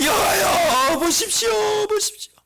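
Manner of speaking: high, wailing, tearful crying voice. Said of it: "펑펑 울면서 기도하는 거예요".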